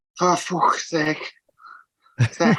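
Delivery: put-on poor Liverpool accent. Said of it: "it's not your best accent".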